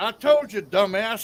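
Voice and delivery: put-on slow, drawn-out, high-pitched old man voice. Retelling what an old man said on a recording: imitating an old man. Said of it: "Then you hear the old man".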